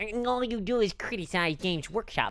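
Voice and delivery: soft, put-on nerdy voice. Mimicking people who say he only criticizes games workshop, in a put-on nerd voice. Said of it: "I'm trying to do like a nerd voice".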